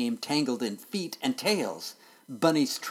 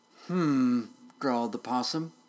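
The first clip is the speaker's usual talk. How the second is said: plain reading voice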